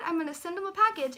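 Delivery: ordinary delivery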